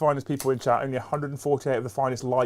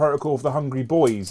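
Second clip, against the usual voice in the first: usual speaking voice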